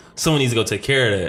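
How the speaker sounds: ordinary talk, nothing marked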